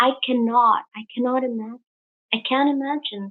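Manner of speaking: hushed whispering. Showing the listener the little fellows, the speaker goes on: whispering. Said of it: "I'm whispering because".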